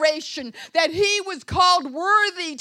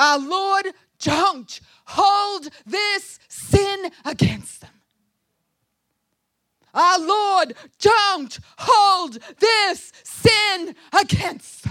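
mock, loud, ringing, trumpet-voiced shout; 2 semitones higher, 3 dB louder than usual. Retelling a stoned man's words as he falls to his knees: retelling a trumpet-voiced shout. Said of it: "he shouts in a trumpet voice".

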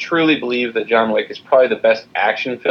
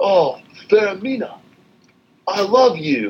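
put-on failed British accent, very high and drawn out; 10 semitones higher than usual. Mocking a miscast actor in Dracula: Keanu Reeves's bad British accent. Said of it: "He just can't do a British accent".

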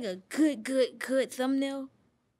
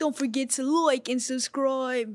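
slipped-into English accent; 3 dB louder than usual. Sounding like a YouTuber after a Fortnite session, in an English accent. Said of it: "automatically hit like an English accent".

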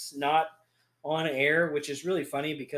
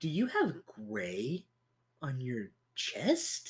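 imitated prim voice, quieter; 6 dB quieter than usual. Retelling what Mom said in the kitchen: imitating prim and proper Mom. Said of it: "all prim and proper".

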